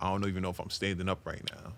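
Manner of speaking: normal talking voice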